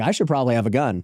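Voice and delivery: ordinary talk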